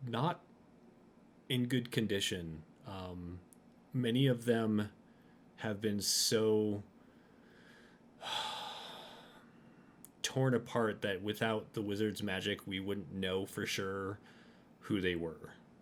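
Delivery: hushed voice. A woman checks no one is close, then answers about the found remains, lowered voice. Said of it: "she does lower her voice".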